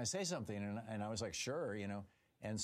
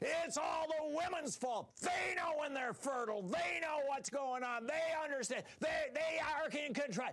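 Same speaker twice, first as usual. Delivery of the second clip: put-on shrill, very high shouted screaming rant; 3 dB louder than usual. Recounting a man pounding his fist on his throne at the speaker, retelling a screaming rant. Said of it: "screaming at me".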